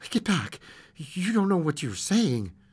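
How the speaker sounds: usual speaking voice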